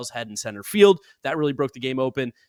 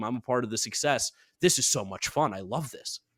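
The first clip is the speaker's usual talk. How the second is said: plain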